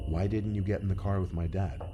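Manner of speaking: normal talking voice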